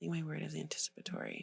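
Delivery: soft, hushed whisper. Answering another speaker's check-in question about how you feel: whispering. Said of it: "You're whispering".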